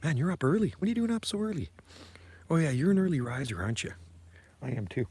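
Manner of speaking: quiet, kept-down voice. Talking to someone while two guys sleep nearby, talking quietly. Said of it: "I'm talking quiet because there's".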